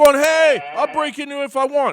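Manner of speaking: high, loud, mocking smug crowing taunt. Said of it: "And they're like".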